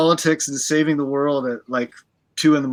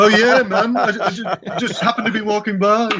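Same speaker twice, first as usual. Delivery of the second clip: put-on Liverpool accent, much higher; 6 semitones higher than usual. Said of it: "That's a good Liverpool accent right there".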